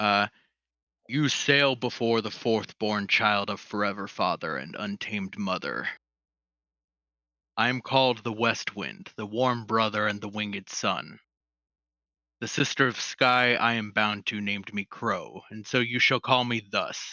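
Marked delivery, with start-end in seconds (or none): 1.1-17.1 booming voice like wind and thunder. Voicing the West Wind greeting the sailors: booming voice like wind and thunder. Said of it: "a booming with a voice like, like wind and thunder".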